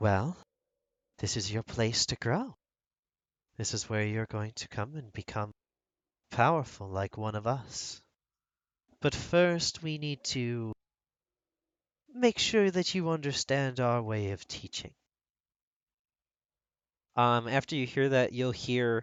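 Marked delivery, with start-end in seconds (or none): 0.0-14.9 very soft, hushed, murmured, soft-spoken voice. Narrating a scene as a girl is pressed against a table, very soft voice. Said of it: "you'll hear a very soft voice go".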